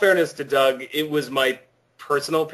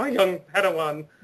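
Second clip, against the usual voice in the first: geeky, nerdy, cartoonish mash-up put-on voice; 3 semitones higher, 3 dB quieter than usual. Showing the voice used for a pathetic knight character: nerdy put-on character voice. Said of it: "combining all of those different voices".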